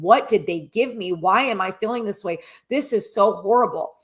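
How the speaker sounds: put-on bawling, panicked, freaking-out crying voice. Retelling a distressed caller's words: imitating someone bawling and freaking out. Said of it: "She's bawling, crying, freaking out".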